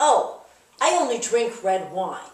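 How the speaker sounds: slow, snide drawl. Retelling what people say about preferring red wine: imitating a snide tone. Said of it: "in this tone that's kind of snide".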